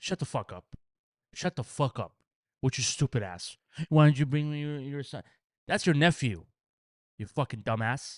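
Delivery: furious, angry swearing rant, going off. Going off at the bride from the story after being told to go: angrily going off. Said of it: "go off".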